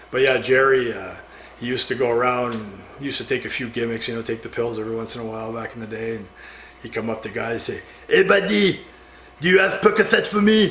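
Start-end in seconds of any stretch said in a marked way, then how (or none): 8.1-10.8 put-on really thick, heavy French accent, pitched up. Retelling how Jerry came up to guys asking for pills, Jerry's really heavy French accent. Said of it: "Really heavy French accent".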